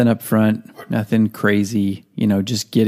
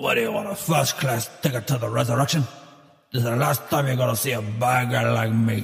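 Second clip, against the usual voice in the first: put-on gruff actor voice; 2 semitones higher, 6 dB quieter than usual. Bursting into a show as Al Pacino: Al Pacino impression. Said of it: "Mister Pacino".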